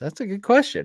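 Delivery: talking through a yawn. Answering a listener's question early in the day, the speaker is yawning. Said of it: "I'm yawning already".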